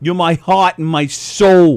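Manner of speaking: imitated, fake New York accent. Imitating actors in nineties movies: fake New York accent. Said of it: "the fake "New York".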